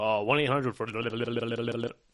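rapid-fire ad disclaimer voice. On a podcast, mimicking the end of a commercial, rapid-fire commercial disclaimer. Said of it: "because they go fast".

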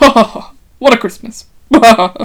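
booming movie-character exclamation at full volume. Quoting a favorite movie line as Yardley: impression of Yardley. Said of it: "I'm gonna do my best impression".

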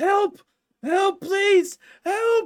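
very high, very loud desperate screaming. Telling the story, act out a man's desperate screaming for help. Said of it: "a man desperately screaming and yelling".

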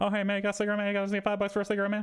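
rapid-fire high-pitched talk. Retelling how a crackhead popped out of an alley, imitating a crackhead's fast talk. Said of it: "immediately fast talking".

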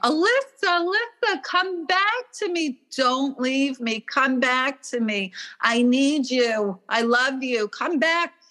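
acted, high, hysterical, inconsolable wailing scream. Retelling her mother at the funeral: imitating her mother screaming. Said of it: "she was screaming".

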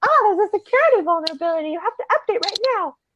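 very high, smart-sounding bear voice. Showing how the speaker reads every WP Engine message, in a smart bear voice. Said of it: "that's my smart bear voice".

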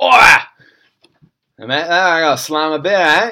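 very loud, high-pitched, put-on Australian accent. Chatting about slamming beers in Australia, putting on an Australian accent. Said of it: "But you got to do the accent".

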